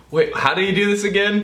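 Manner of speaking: high, fast, flustered, panicked blurt. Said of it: "I was like".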